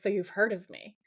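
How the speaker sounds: smug, cocky, self-assured ladies'-man delivery. Retelling a TV scene, quoting Dean: imitating Dean's smug irresistible tone. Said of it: "he says it in this, like, smug, women find me irresistible way".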